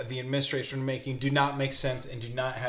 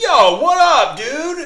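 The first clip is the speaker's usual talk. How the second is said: mock antagonistic bro voice, higher and louder; 15 dB louder than usual. Imitating people in Spain calling the speaker out: imitating an antagonistic bro accent. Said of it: "me doing just an accent of people calling me out".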